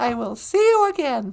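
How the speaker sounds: plain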